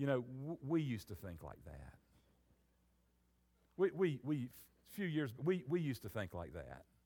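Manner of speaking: put-on condescending tone. Retelling what others said to them during a theology talk; mock-condescending. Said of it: "they would look at us kind of condescendingly and say".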